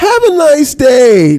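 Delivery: very high, prissy, feminine voice. Mocking someone's sign-off from a replayed clip: mocking imitation, sounding feminine. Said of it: "That's so feminine".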